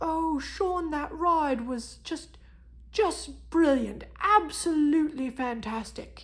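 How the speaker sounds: loud, enthusiastic, gushing put-on British accent. Quoting roller coaster riders' reviews in a British accent. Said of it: "in their British accents".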